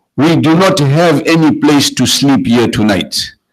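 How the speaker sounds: ordinary talk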